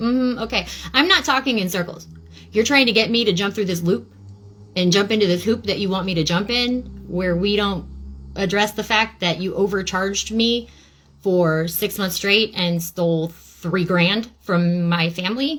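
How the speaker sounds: plain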